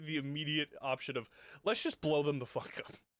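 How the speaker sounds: talking through giggles. Explaining to the other players why they are laughing, laughing while talking. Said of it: "I'm laughing at the".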